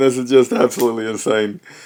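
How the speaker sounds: speaking through open laughter. Reacting to what you just heard, laughing while talking. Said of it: "I'm sorry, I'm laughing".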